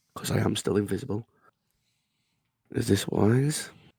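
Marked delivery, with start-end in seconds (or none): 2.7-3.7 raised, theatrical stage aside. Muttering in character to a companion while invisible: under the breath. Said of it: "I'm gonna say under my voice to Jin".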